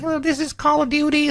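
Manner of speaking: put-on very high, squeaky child voice.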